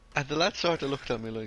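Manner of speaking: plain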